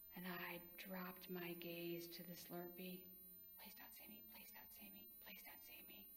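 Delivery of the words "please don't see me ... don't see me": rushed, rapid words under the breath, whispered, very quiet. The narrator drops their gaze as a car full of kids looks over, whispered. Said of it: "I whispered".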